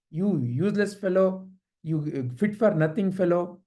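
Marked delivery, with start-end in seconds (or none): none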